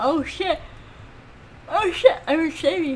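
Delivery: slow, high talk, words stretched by a yawn. Lost on unfamiliar streets and talking to you guys, yawning. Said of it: "I'm sorry I'm yawning".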